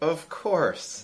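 forced out through clenched teeth. Hair of the Sun answers a request to accompany her, speaking through gritted teeth. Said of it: "She says through gritted teeth".

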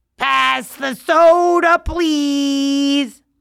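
loud gruff holler. Reading a story about meeting the president, the narrator voices a young man in a loud, gruff voice. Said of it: "he said it in a very loud, gruff voice".

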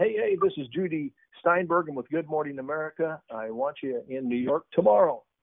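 mock eager, mildly excited, shouty yell. Retelling a phone call where a caller breaks in: imitating someone screaming. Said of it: "I hear this screaming".

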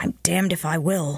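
muttered under breath. Told by a voice to put away the light, the narrator replies, muttered. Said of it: "I muttered".

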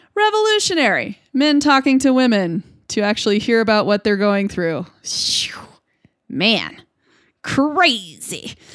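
sarcastic, swooping, faux-astonished mock amazement. Lecturing on research into hysteria, in a sarcastic tone. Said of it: "A little bit of sarcasm for you there".

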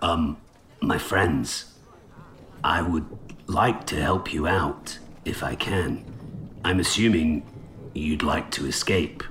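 put-on, extra deep character voice. Voicing Cryan offering to help prisoners escape: even deeper voice. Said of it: "I'm now gonna do an even deeper voice than that".

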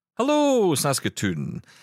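very high voice with a strong Scottish accent. Greeting the city of Saskatoon aloud: sounding very Scottish. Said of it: "I sound very Scottish saying that".

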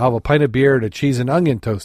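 normal talking voice

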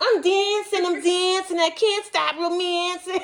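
cartoonish New York voice. Retelling a cartoon episode where she could not stop dancing, do Olive Oyl's New York accent. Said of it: "she had like that New York accent".

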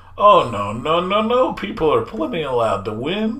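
high, swooping ringmaster character voice. The ringmaster answers a visitor's question about his gambling place, crooked ringmaster voice. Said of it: "one of them being the ringmaster, / And then they start backpedaling and step into the steps into the other room. / The ringmaster starts talking and they're like".

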